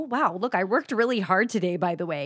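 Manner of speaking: plain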